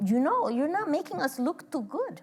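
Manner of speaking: imitated Cuban accent. Retelling what a woman would say during the Q&A, in a Cuban accent. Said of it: "(WITH ACCENT)".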